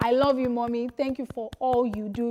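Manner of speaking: ordinary talk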